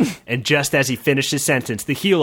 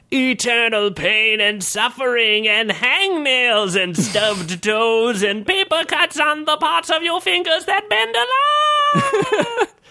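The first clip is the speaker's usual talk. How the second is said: very high ghostly wail, long and drawn out; 11 semitones higher than usual. A spirit flies down to the barbarian, in a wailing spirit voice. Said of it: "a spirit flew down to the barbarian and wailed".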